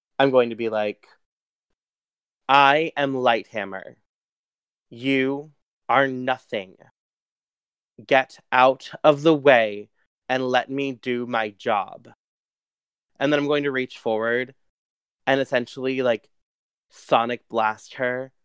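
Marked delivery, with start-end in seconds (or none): 2.5-12.1 slow, grand, larger-than-life heroic declaiming voice. Landing on a building's roof to confront a foe, as Lighthammer in a booming voice. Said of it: "in this voice that, like, echoes across the entire city".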